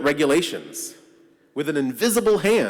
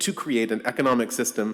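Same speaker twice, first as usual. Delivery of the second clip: ordinary delivery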